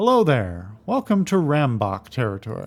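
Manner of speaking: proud, swooping voice brimming with pride. Narrator voices a woman calling out to travellers at a roadblock, brimming with pride. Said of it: "her voice brimming with pride".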